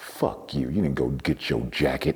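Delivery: muttering under breath. Retelling what someone said as the speaker went upstairs: imitating muttering under her breath. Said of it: "say under her breath".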